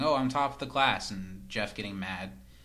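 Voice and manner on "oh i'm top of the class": plain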